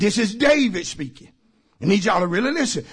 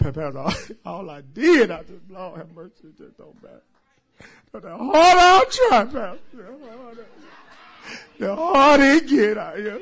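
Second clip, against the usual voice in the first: put-on, mock crying voice. Acting out a distressed person talking to the pastor: imitating someone crying. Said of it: "I'm sorry for crying".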